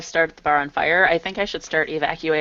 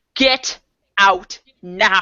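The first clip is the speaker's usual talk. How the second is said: full-on, furious screaming yell; 4 semitones higher, 3 dB louder than usual. Describing a character ordering a bar patron out: screaming in someone's face. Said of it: "just screams right in his face".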